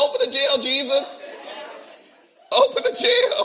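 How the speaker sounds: high, mock crying, pleading voice. Speaker recalls being arrested and jailed, retelling crying out to Jesus. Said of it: "I was crying like Paul and Silas".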